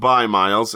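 ordinary talk, nothing marked

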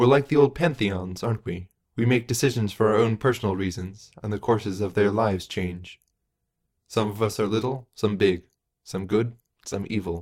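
plain reading voice

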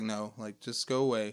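ordinary delivery

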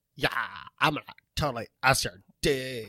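put-on seductive bedroom voice. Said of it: "I talk like".

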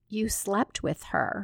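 ordinary talk

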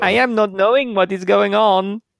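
over-the-top exaggerated Mexican accent, cartoon-character style. Demonstrating a Mexican character he does, speaking in the Mexican character accent. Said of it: "this Mexican character he, he talks in".

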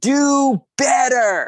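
mock loud yell. Telling how a person on the dance floor yelled at them, retelling someone's yell. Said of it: "looks at me and yells".

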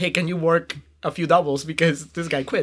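ordinary talk, nothing marked

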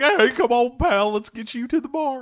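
loud, very high-pitched calling voice. Retelling a movie scene, quoting Maniac: Maniac voice. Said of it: "I don't know where that voice came from".

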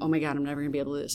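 fast, panicked, on the verge of crying. Retelling panicking backstage before a show, imitating being on the verge of crying. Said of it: "on the verge of crying".

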